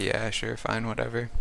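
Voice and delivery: ordinary talk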